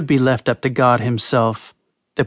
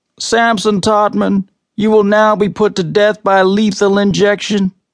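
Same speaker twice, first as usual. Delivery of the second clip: loud, flat, toneless, level official-sounding monotone; 7 semitones higher, 3 dB louder than usual. An officer speaks to the condemned man, in a loud monotone voice. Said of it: "The officer spoke in a loud monotone voice".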